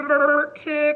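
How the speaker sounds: speaking as if underwater. Leading listeners in repeating a word, saying it as if underwater. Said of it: "say it underwater".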